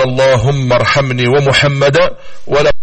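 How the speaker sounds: ordinary delivery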